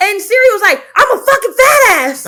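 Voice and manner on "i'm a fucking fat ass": sudden, high-pitched yelled outburst. Retelling what a phone assistant said: imitating Siri yelling. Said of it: "Siri yelled at me".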